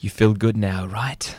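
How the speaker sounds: hushed, whispered voice. Sitting closer to Susie to explain what they mean, whispering. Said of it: "I have to whisper".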